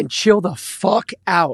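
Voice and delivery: voice cracking. Ranting to a co-speaker about upset fans, voice cracking. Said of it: "my voice is cracked when I say that".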